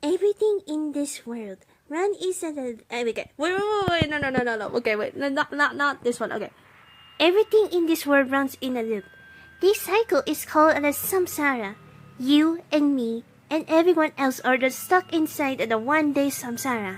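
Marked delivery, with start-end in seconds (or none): 7.2-17.0 put-on childlike character voice. Trying a Nahida voice impression of a game line. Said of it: "Naida's voice, voice impression".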